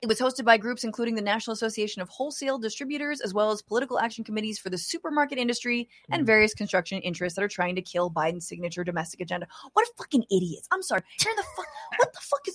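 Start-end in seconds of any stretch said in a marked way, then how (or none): 9.7-12.6 furious outburst, pitched very high. Reading a report about her donors, the speaker reacts: angry outburst. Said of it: "I'm so mad".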